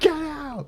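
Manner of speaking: put-on yelling voice. Retelling a video where a passenger yells at the bus driver: imitating someone yelling. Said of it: "yelling at her".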